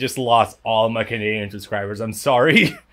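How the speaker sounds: ordinary delivery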